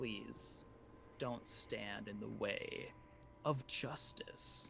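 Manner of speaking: slow, creepy undead whisper right at the ear. Game master voices an undead who lays a hand on the player's shoulder, undead voice in your ear. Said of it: "He's undead. / And he reaches down and he tries to take the bag from you. / and you hear a voice in your ear that says".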